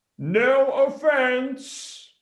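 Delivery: very high, shrill yell. Saying the line again after being asked to yell it: yelling. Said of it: "I wanna get you to yell it".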